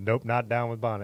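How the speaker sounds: ordinary delivery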